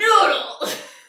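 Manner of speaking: very high, very loud wrestler-style ring bellow. Prompted to say the ingredient again, with arm action, in a WWE wrestler impression. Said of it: "Can you give me a little arm action?".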